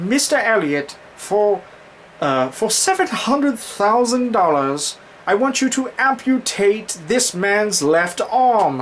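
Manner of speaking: put-on upbeat English accent. Retelling a story, the speaker quotes what one man said: peppy english accent. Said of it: "peppy English accent".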